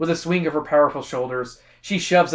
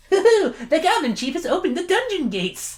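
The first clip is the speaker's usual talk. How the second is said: mocking put-on voice, higher pitch. Reading a book line aloud to the group, imitating another player's voice. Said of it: "is that what me and we sound like".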